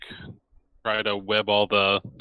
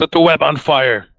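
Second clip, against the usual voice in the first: put-on high, loud battle yell; 7 semitones higher, 6 dB louder than usual. Calling out an in-character line to the others: yelling in character. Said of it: "And I'm gonna yell".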